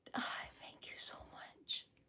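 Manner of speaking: soft, breathless, overwhelmed whisper.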